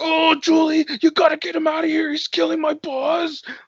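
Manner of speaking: put-on angry strung-out villain. Retelling a movie villain's line: imitating an angry strung-out villain. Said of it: "he's so angry".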